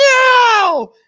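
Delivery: put-on very loud, very high, shrill, drawn-out child's scream. Retelling a child refusing a goodbye kiss, imitating a child screaming. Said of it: "She screamed right in my face".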